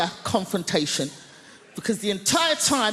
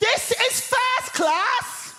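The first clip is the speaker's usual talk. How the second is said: mock, very high, full-volume shrill shout, drawn out. Speaker acts out a woman in first class shouting at them, shouting at top of voice. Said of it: "at the top of her voice, she shouts".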